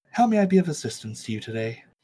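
put-on androgynous masseuse voice. Narrating a scene, the speaker voices a masseuse greeting a visitor: androgynous masseuse voice. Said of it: "You find an androgynous human masseuse".

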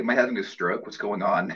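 ordinary talk, nothing marked

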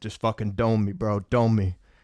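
acted whisper. Speaker retells what they whispered to a friend before being sprayed: retelling a whisper. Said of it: "I whispered to my friend".

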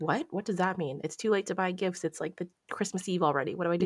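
put-on panicked voice. Retelling a request for a Christmas surprise, imitating Jeff panicking.

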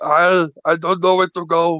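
mock Austrian accent, action-hero style. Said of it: "Arnold's going".

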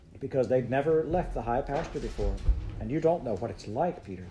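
usual speaking voice

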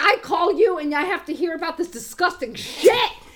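mock yelling. Retelling a grossed-out friend yelling at the speaker on the phone: retelling a yell. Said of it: "he's yelling at me".

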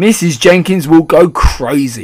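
loud, drawn-out yelling. A father answers the narrator's grandmother, yelling. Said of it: "yelled Mr. Jenkins".

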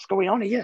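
high, bewildered tone. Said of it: "and I'm thinking".

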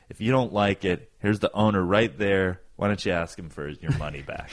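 ordinary talk

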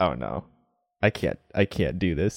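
plain

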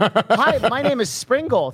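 put-on little elf voice, high and slow. Reading out a message from an elf named springle: put-on elf voice. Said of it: "this fucking elf pops up, and he's like".

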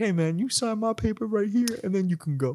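high-pitched, slick smooth-talker patter. Acting out asking a tough champ for an autograph: imitating a smooth talker. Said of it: "a smooth ass motherfucker".

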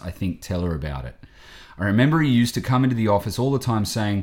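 plain

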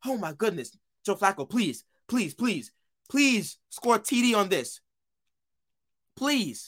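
acted-out screaming. Reliving a tense game moment, the speaker is retelling own screaming. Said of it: "I'm over here screaming".

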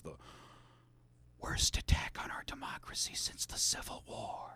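hushed, slow, breathy whisper, drawn out and soft. Imitating Biden's line to Congress: slow whispered Biden impression. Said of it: "that's how Biden would say it".

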